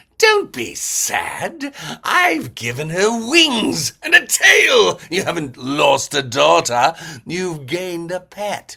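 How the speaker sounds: put-on loud, slow, booming, swooping English accent. Showing a favorite voice from the Barbie movie: English Wenlock voice. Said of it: "Wenlock from the Barbie movie".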